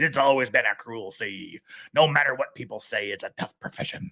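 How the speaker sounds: put-on pirate voice, done as a bit. Repeating a line about forty years at sea in a put-on pirate voice. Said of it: "I want to say this in a pirate's voice".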